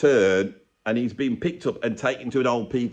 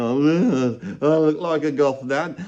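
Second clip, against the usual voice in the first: mock sarcastic, slow, lingering on the word Oh; 3 semitones higher than usual. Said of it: "saying sarky things to people".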